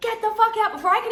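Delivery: very high-pitched, loud, furious shout. Retelling how Tim yelled after champagne hit his shoe, imitating Tim's angry yell. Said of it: "And he's angry".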